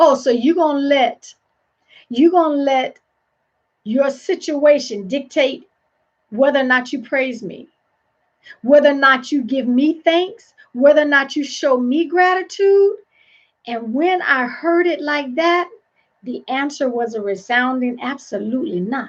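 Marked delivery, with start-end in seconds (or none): none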